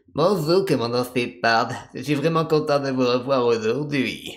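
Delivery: campy, creepy character voice. Demonstrating his voice for Kaidan greeting Commander Shepard, in a campy, creepy Kaidan voice. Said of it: "un mix entre un... entre un- une grande folle et un pervers".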